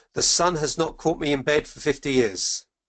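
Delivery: ordinary delivery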